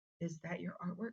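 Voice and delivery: hushed, very quiet, barely audible half-whisper. Retelling a woman approaching during a performance: imitating her half-whispering. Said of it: "She was, like, whispering".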